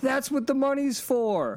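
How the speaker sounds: high-pitched yelling.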